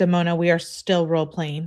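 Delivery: plain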